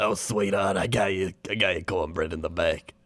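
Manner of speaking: put-on very old woman voice, around ninety. Recounting hitting on a waitress while drunk, speaker is imitating a 90-year-old waitress. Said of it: "like 90-year-old waitress".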